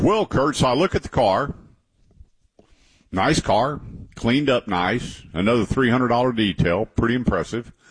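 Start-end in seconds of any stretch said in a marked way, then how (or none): none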